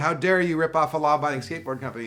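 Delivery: put-on yell. Retelling a cartoon ad where kids confront the owner: imitating a yell. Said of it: "yelled at him".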